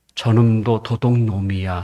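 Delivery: low, soft, suspicious muttered voice.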